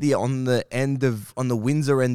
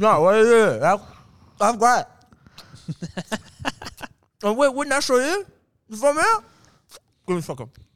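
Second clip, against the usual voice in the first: mock mouth-full talking, much higher; 9 semitones higher, 4 dB louder than usual. Speaker acting out a performer doing crowd work while eating pizza, imitating talking while eating. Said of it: "doing crowd work whilst he's eating a pizza".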